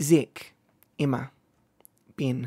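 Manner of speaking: put-on New Zealand accent. A streamer shows off an accent to chat, doing a kiwi accent. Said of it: "how is my Kiwi accent?".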